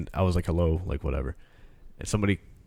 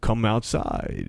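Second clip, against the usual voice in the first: mock distorted phone-like voice; 2 semitones higher than usual. Retelling a dream call where the phone voice distorted: imitating a distorted phone voice. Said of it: "the voice on the phone started to distort".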